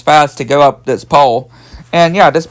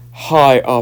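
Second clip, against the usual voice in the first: put-on low, deep bass voice, not gruff; 2 semitones lower, 4 dB quieter than usual. Retelling a woman greeting a police officer after boasting her voice would deepen: put-on deep voice. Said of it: "In a deep voice".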